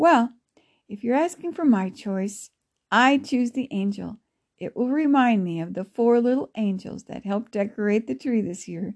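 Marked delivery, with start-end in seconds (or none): none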